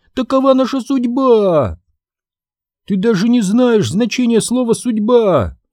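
crying, wailing scream, high and shrill. Narrator reads Daphne answering her older sister Sabrina, screaming. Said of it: "завопила Дафна".

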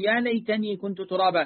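ordinary delivery

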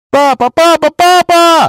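despairing, very high, desperate cry. The narrator, hearing Pennywise giggle from all sides: shouted in despair. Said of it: "Закричала я в отчаянии".

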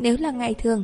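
plain reading voice

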